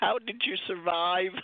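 ordinary talk, nothing marked

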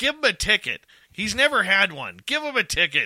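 very high, loud shouting. Retelling a traffic stop, yelling at the cop: retelling yelling at a cop. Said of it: "I'm yelling at the cop".

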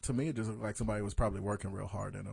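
very quiet, low, stoic and unmoved deadpan. Retelling what someone quietly said while everyone was laughing; retelling a quiet, stoic remark. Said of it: "And Isaac just quietly goes".

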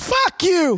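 put-on very high screaming child voice, English accent. Retelling a video where a six-year-old screams at his father: imitating a kid screaming, english accent. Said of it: "in his English accent, screams".

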